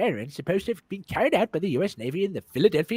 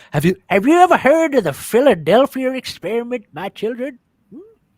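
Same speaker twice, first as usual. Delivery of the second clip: put-on loud old-man voice; 3 semitones higher, 9 dB louder than usual. Asked to tell the story, Grandpa Smirk addresses his children in an old-man voice. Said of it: "You sound like an old man".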